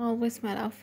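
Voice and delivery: ordinary delivery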